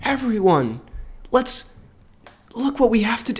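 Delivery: slow, drawn-out, shouted stage whisper. Mocking a kid actor's speech at the end, imitating a whisper-shout. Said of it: "he like whisper shouts this speech".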